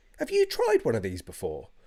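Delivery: swooping, put-on enthusiastic hard-selling delivery. Retelling walking into the living room offering a beer: retelling own fake enthusiasm. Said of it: "you've gotta say it with that enthu-, enthusiasm".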